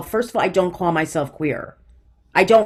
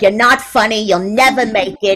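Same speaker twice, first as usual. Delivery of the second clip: mocking old person voice, higher and louder; 3 semitones higher, 5 dB louder than usual.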